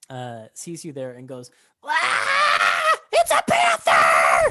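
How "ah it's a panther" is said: high, loud, slow panicked shriek. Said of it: "and just starts shouting".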